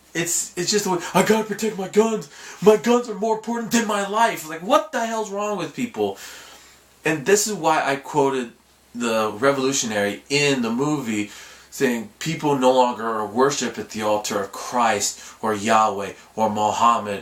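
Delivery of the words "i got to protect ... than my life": fake, mocking caricature voice, pitched up. Speaker mocks people, apologizes for the voice, then does it again: mocking put-on voice. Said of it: "Sorry for doing that voice".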